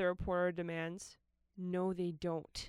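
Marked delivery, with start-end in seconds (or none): 1.6-2.7 low muttering, half under the breath. Pressed by a reporter demanding an answer, he mutters back: muttered. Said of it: "Rhett mutters".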